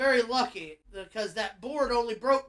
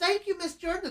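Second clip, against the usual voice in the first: put-on boy's voice, higher; 8 semitones higher than usual. Retelling how a kid thanked a wrestler, imitating a boy's voice. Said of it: "His voice went from".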